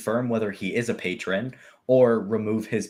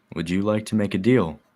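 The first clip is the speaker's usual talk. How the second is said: hushed whisper. Narrator voicing a man who leans in toward the listener, whispering. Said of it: "he whispers to you".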